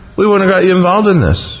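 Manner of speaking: embarrassed, sheepish tone. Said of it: "they kinda sheepishly".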